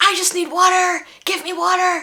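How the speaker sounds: high, desperate screaming. Retelling a hospital patient screaming for water: imitating a woman screaming. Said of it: "kept screaming for the next twenty minutes".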